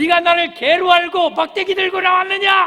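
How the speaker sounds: high, loud, taunting giant voice shout.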